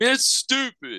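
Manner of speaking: mock, very high, fed-up complaining. Retelling someone's complaint about not playing music: imitating a pissed-off complaint. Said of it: "and get all pissed off".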